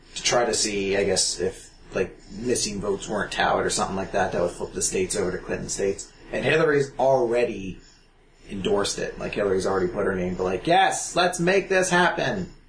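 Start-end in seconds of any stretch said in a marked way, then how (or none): 10.7-12.5 sugary sweet put-on voice, pitched up, slowed down. Joking about a recount endorsement: Hillary Clinton impersonation. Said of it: "That's my sweet Hillary Clinton impersonation".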